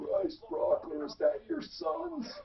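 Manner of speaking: mock loud, very high-pitched, scratchy, drawn-out holler. The speaker recalls being yelled at across a crowded room, retelling Kurt's loud scratchy yell. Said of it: "yells out ... loud, scratchy voice guy".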